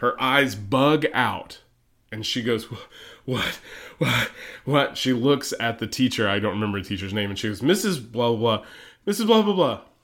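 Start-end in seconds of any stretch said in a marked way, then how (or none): 7.6-9.8 very loud, urgent calling-out shout. Acting out how she called to the teacher, retelling a very loud shout. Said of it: "In the loudest voice I think anyone has ever said words".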